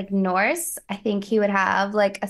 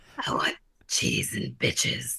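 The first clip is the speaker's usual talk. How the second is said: deep, hushed, breathy squirrel voice, under the breath; 9 semitones lower, 6 dB quieter than usual. Asked to try the voice again before ranking fictional rodents, deep Ratatoskr voice. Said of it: "No, it's deeper".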